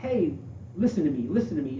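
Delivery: ordinary delivery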